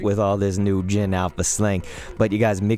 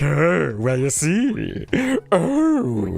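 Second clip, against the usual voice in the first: slow, drawn-out, high, swooping eccentric voice; 7 semitones higher than usual. Comparing a voice to a cartoon: Rocko's Modern Life voice. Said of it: "one of those Rocco's Modern Life voices".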